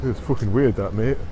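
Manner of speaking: bad put-on Birmingham accent. Commenting over a video, in a failed Birmingham accent. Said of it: "That was not a Birmingham accent".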